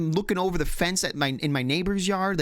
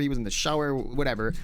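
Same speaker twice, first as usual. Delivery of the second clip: ordinary talk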